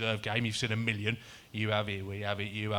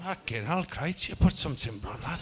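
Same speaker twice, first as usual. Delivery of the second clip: put-on higher, teasing football manager voice; 5 semitones higher than usual. Retelling what the gaffer said after the summer: Dean Saunders impression. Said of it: "Great impression".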